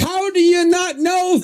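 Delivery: shrill, very high, exasperated, frustrated screaming. Retelling watching a trivia show: retelling own past screaming. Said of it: "I'm screaming at Bird".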